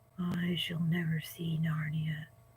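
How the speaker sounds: speaking very low, soft and hushed. Reading a story aloud, a horse answers his companion, low voice. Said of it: "said Bree in a low voice".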